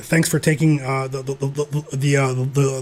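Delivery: stuttering. Thanking newsletter readers for signing up, stuttering. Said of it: "sorry for stuttering".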